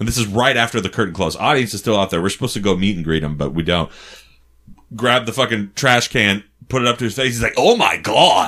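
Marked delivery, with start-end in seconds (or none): 7.6-8.5 acted gravelly voice. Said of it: "he talks like this".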